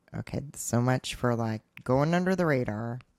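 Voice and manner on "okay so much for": plain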